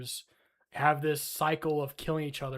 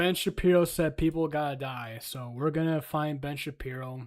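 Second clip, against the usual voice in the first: plain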